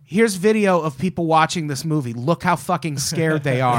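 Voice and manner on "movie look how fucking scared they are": normal talking voice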